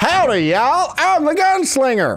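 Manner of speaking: high-pitched talking hot dog character voice. While playing a game, the speaker switches voices: hot dog voice. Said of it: "hot dog voice".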